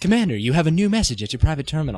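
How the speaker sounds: put-on crappy, shoddy British accent. Quoting the private-terminal message alert from a game: crappy British Mass Effect voice. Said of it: "I don't know why I made her British".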